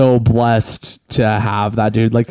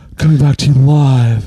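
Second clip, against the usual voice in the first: put-on sexy radio DJ voice, raised pitch; 3 semitones higher, 5 dB louder than usual. Joking into the close microphone: put-on porn star radio voice. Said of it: "I like that radio voice".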